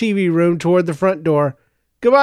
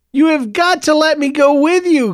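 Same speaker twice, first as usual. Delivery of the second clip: pleading, imploring, higher-pitched begging voice; 9 semitones higher than usual. Clovis, jerking on Joseph's shirt sleeve, speaks to Joseph: begging. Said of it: "Clovis begged".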